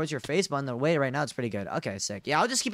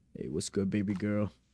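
put-on deep, bass-boosted, bass-heavy gamer e-boy voice; 6 semitones lower, 4 dB quieter than usual. Testing a voice filter for chat, sounding like Valorant e-boys: deep bass-boosted e-boy voice. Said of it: "I should turn up the bass all the way up, dude. So I sound like those Valorant e-boys".

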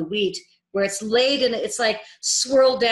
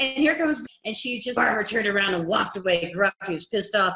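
ordinary talk, nothing marked

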